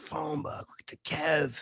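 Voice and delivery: put-on excited crowd call, scream-like, pitch swinging. Speaker retells holding up a phone book from the nineteenth row: retelling a scream. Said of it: "I'm just screaming like the".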